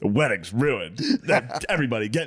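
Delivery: put-on sassy male voice. Retelling a bit done at a wedding: put-on sassy guy voice. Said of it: "being a sassy guy at the wedding".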